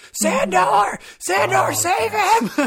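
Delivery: put-on screaming, very high, loud and drawn out. Retelling screaming at the TV during a scene: retelling screaming at the TV. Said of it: "I was screaming at the T V".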